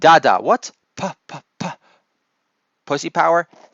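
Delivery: put-on small child voice, halting, sounding out letters. Imitating a young granddaughter sounding out a sign: imitating a small child sounding out. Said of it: "try to make out one of those signs".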